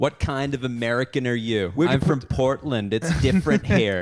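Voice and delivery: put-on snooty, condescending Los Angeles accent. Mocking in an american accent: condescending la american accent. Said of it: "That's where I was at".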